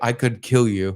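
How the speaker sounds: mock-menacing, acted-out tone. Acting out what they would say to threaten them, mock-threatening. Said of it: "threaten them".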